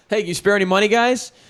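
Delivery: acted, very high-pitched hollering. Retelling how a man at a bar asked for money: imitating a man yelling. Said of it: "he yells out to my buddy".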